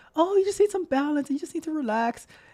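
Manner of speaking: very high, sugary-sweet, soft, soothing voice. Acting out the little voice in one's head, in a sweet little voice. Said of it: "That little voice can sound so so sweet".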